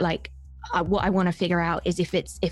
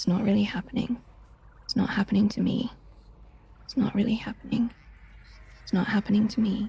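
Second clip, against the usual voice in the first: barely audible mumbling, repeated over and over; 3 semitones higher than usual. Voicing a character calming herself down: very quiet muttering. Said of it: "very, very, very quietly, you hear".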